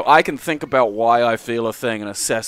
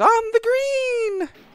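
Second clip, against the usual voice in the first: very high, tiny little golf announcer voice. Describing an obsession with a game's little voice: imitating the Neo Turf Masters voice. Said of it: "the little voice that goes".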